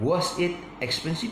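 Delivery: pitch rises at the end of expensive. Explaining intonation with an example question: rising pitch on expensive. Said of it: "If you see my voice going up, you are correct".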